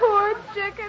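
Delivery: high, sobbing woman's voice.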